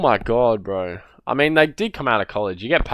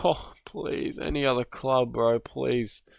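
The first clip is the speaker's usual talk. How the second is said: mock tearful pleading, quieter; 7 dB quieter than usual. Voicing what the player's crying mother seems to say: imitating a crying mother's plea. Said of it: "his mum's crying like".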